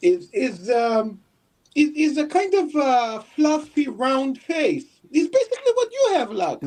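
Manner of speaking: put-on high-pitched baby talk voice. Answering a chat question about a name, talking in a baby voice. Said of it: "talking like a fucking baby?".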